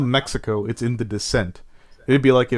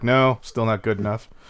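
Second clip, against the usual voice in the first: plain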